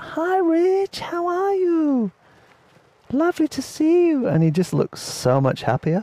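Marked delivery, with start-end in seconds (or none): 0.0-4.3 very high, slow, really feminine voice. Retelling how a man greeted them, imitating his feminine voice. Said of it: "speaking in a really like feminine voice".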